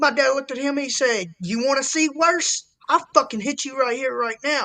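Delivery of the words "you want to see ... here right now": mock-angry tone, higher pitch. Telling a story about his dad threatening a man, retelling dad's angry threat. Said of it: "he pissed my dad off".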